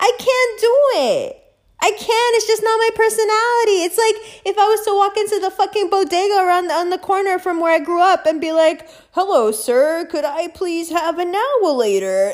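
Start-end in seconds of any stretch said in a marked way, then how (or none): 9.1-12.3 overly proper, well-mannered, put-on polite voice. Acting out a hypothetical bodega visit: put-on polite customer voice. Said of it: "acting like a fucking customer".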